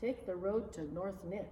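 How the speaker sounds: ordinary delivery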